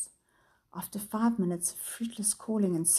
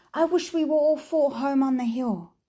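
urgent, loud, high-pitched shout; 6 semitones higher, 8 dB louder than usual. A boy in a story, his hand closing on something smooth, shouting. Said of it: "he shouted".

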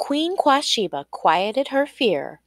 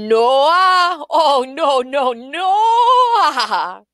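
loud, high, very slow hollering, name drawn out; 4 semitones higher, 5 dB louder than usual. Leetman, after Queen Quashiba guesses his name wrong, hollers out loud. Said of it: "Leetman hollered out loud".

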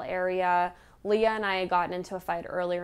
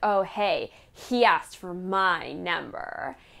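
put-on bragging tone, much slower. Retelling how a woman bragged that a guy asked for her number, imitating her bragging. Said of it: "She came into it like very braggingly way".

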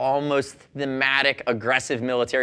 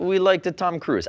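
put-on, vaguely Italian accent; 4 semitones higher than usual. Quoting Maverick Vinales's dad on his son's name, the host does a put-on accent. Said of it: "I'll stop doing accents".

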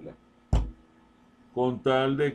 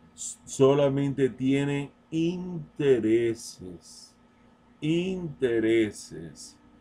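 very slow, deliberate, drawn-out emphasis. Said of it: "Te lo voy a repetir lentamente".

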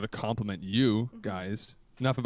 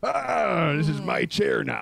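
very slow, loud, gravelly put-on pirate growl; 4 semitones higher, 4 dB louder than usual. Showing others what a pirate in a living room sounds like: pirate voice. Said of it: "I'm a pirate".

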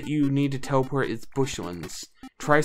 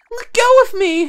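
very high, very loud, protesting shriek; 10 dB louder than usual. Voicing a captured game character who protests: Sue voice. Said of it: "I'm not gonna do that voice for her".

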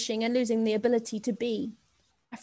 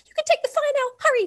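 very high squeak, terrified yet relieved; 6 dB louder than usual. Reading a story, a rat on a boy's shoulder urges him on, squeaking. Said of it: "squeaked rat -a in a voice that was simultaneously relieved and terrified".

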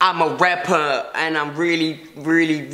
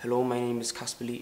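attempted South African accent landing on Irish; 4 semitones lower, 12 dB quieter than usual. Doing a numbered series of impressions, the speaker tries a bad Casper Lee impression. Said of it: "That was Irish".

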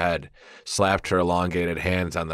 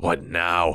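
growled, growling tone. Narrator reading a first-person story, reacting to a scratching sound, growled. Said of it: "I growled".

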